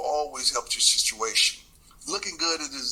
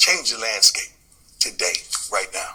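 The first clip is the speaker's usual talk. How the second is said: loud, signature reading voice; 3 semitones lower, 6 dB louder than usual. Reading a portion of his book aloud after a request: his signature reading voice. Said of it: "in that [name] voice".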